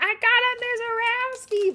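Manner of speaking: put-on shrill, very high, very loud, excited child's shriek. Act out the small child who finally gets the card he wanted, imitating a small child screaming. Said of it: "he just starts screaming".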